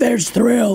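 mock dry woman's voice. Retelling what a woman in the elevator said to him: imitating a very dry voice. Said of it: "this woman with a very dry voice said".

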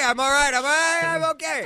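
high, loud, panicked, laughing delivery.

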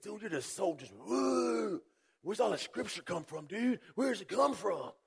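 very high, easygoing dude voice, drawn-out "woo". Retelling a new guy's questions about scripture: imitating casual "dude" talk. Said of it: "He talks like that".

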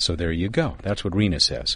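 normal talking voice

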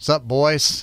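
put-on heavy, thick Southern accent. Retelling how two game wardens greeted them from a boat, in a strong southern accent. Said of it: "so strong Southern accent".

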